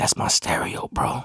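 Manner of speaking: hushed, breathy whisper under the breath. Telling a story, the speaker quotes another man whispering to him, retelling a whisper. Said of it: "he whispers to me".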